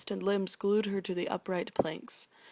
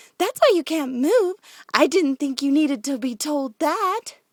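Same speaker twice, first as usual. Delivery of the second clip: very loud, high, laced with giggles; 7 semitones higher, 11 dB louder than usual. Narrating Pinkie's reply, voice Pinkie giggling. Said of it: "Pinkie giggled even more".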